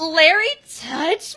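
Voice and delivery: high, loud, appalled and grossed-out exclamation. Retelling a cartoon scene where a girl opens an envelope: imitating a disgusted reaction. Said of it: "she gets a look of disgust on her face".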